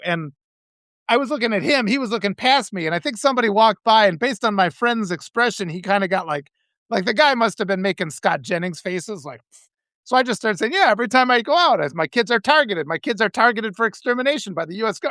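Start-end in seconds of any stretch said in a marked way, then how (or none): none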